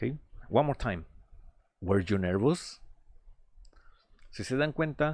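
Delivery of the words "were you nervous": pitch climbs at the end on nervous. Spanish speaker teaching English question intonation: rising intonation at the end. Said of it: "hacia el final tiendo a elevar eh, la entonación de mi pregunta".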